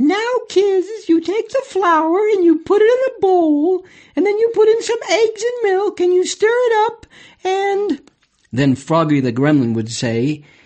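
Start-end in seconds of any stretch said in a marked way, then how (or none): 0.0-8.0 very high, sing-song lady's lecturing voice. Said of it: "She'd go".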